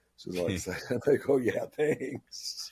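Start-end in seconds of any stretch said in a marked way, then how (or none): 1.4-2.7 unexcited, unenthusiastic tone, higher and quieter. Speaker retelling own reply to an excited staffer renewing an ID, retelling an unenthusiastic reply. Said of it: "Somehow I wasn't as excited as she was".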